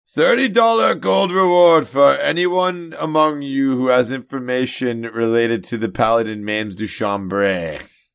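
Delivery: high, all-out, top-of-lungs shout. Shouting a reward offer to a crowd: yelling at the top of lungs. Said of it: "just yell at the top of my lungs".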